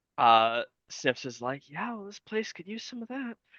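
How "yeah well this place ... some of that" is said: very soft, high-pitched, hushed mutter under the breath. Voicing Snips answering a claim to improve the world: Snips muttering under his breath. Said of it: "just kind of under his breath".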